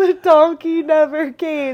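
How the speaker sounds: high, loud crying through tears. Retelling what a crying hiker said at the pass: imitating someone crying. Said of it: "And she's crying".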